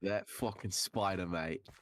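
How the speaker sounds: put-on Australian accent. Joking with a friend about a spider bite, Australian accent. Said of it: "That was Australian".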